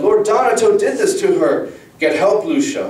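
loud, shrill, accusing, full-throated yell pitched way up. Lucia, seeing her mother in pain, yelled to her father. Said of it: "Lucia yelled".

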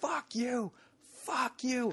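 very high, drawn-out, stretched scream. Retelling a heckler at the stage: imitating a man screaming. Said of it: "he's screaming".

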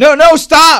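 shrill, very loud, high-pitched soldier's shout. Voicing a soldier who tries to stop the firing: soldier shouting. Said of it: "The first soldier tries to shout".

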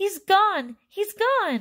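very high, shrill, stretched-out, drawn-out scream. Narrator reads a mother staring where her son had been: screaming. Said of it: "she screamed".

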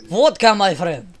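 bad put-on Russian accent. Attempting a Russian accent after being told to, bad Russian accent. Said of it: "you need to have a Russian accent".

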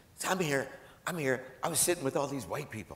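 high, hushed, secretive half-whisper. Retelling a phone call where the other person answers: imitating someone half-whispering. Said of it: "in a whisper".

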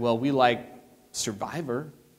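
put-on sheepish voice. Retelling how two people looked at each other and answered, imitating a sheepish reply. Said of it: "they kind of sheepishly said".

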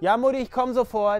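loud calling voice.

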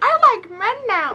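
clumsy, very high, loud cartoon kid voice. Recalling a Simpsons movie scene, the speaker does a bad Ralph impression. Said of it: "That was a really bad Ralph impression".

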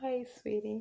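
soft, very calm voice. Describing how a woman's voice changes, imitating her: imitating her soft, calm voice. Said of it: "the voice becomes more soft".

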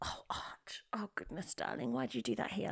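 whispered, breathy, guilt-laden voice. Acting out blaming a child for a fart: imitating own guilty-sounding blaming. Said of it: "sounds pretty guilty".

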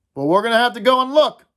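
even voice with bravado. A boy among the group speaks up, surprising himself: even voice with bravado. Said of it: "not so much by the quality of his voice, which was even, but by the bravado".

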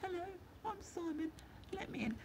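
hushed, high, soft half-whisper. Explaining how a car key works, voicing the key, half-whispering key voice. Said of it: "it whispers".

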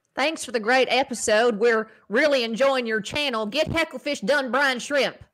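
put-on southern American accent. Reading a viewer's message aloud on request: southern accent. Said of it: "Can you read that with a Southern accent?".

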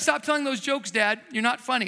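normal talking voice

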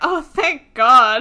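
slow, loud relieved gush.

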